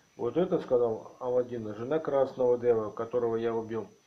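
ordinary delivery

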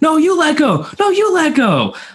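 loud, high-pitched yelling.

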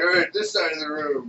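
put-on stoned stoner voice. Imitating stoned people in a crowd: imitating stoned people. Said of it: "stone people are like".

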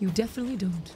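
mock-serious voice. Reassuring a viewer who says he asks stupid questions, very serious voice. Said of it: "Very serious voice now".

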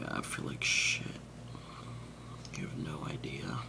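hushed, quiet, breathy whisper. Talking while recording a vlog, whispering. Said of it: "I'm like whispering".

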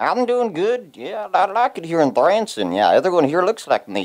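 put-on high old puppet voice. A retirement-home puppet answers the host asking how he is, as Mervin Young. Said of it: "Please let me welcome self-proclaimed ladies' man and local Shady Folks retirement home resident, Mervin Young".

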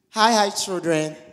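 booming, very loud, high-pitched voice at full volume. Invited speaker greets the children at the gathering: too loud. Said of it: "I'm too loud, right?".

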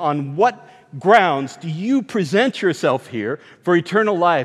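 normal talking voice

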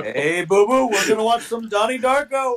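silly, goofy animated cartoon bear voice. Riffing with friends over a game about Jellystone Park, in a Yogi Bear voice. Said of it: "I love how like boo boo and like Yogi are interchangeable".

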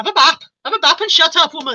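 attempted Welsh accent. Speaker imagines saying a line in a Welsh accent; attempted Welsh accent. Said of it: "if I could do a Welsh accent".

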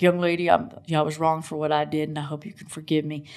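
low, gentle voice. Retelling what a former border policeman said to her, imitating his deep voice. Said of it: "he's got this deep voice".

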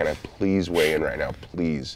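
put-on, desperate pleading and begging. Retelling asking the athletic commission to weigh in: imitating himself begging. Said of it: "begging this guy".

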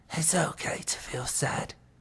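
soft, slow, whispered croaking voice. Narrator reads Grandpa passing the tissues to Owen, croaking. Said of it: "croaked Grandpa".

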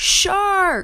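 yelled out high and loud.

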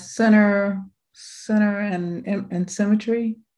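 unsure, hesitant, guessing tone. Asked which rule she used to make her photo, answering in an unsure, guessing tone. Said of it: "You sound like you're guessing".

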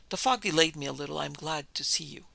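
ordinary delivery

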